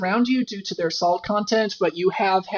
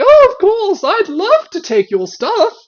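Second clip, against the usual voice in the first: put-on annoying voice, higher and louder; 12 semitones higher, 10 dB louder than usual. Voicing the bag that talks, in a Choose Goose voice. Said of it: "he sounds like Choose Goose from, uh, Adventure Time".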